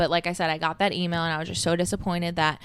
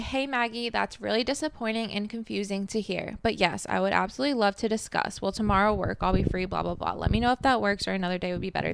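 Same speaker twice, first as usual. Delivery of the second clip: plain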